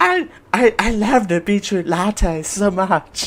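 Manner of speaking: fake gentle whispering voice. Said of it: "it's my [name] impression".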